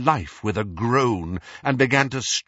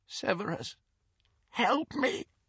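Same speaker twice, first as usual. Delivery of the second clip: whisper breaking and cracking with terror; 10 semitones higher, 8 dB quieter than usual. Narrator reading a novel voices a terrified woman prisoner: cracked, terrified voice. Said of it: "in a cracked and terrified voice".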